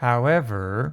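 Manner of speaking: however with rising pitch. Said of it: "that's how you pronounce the however".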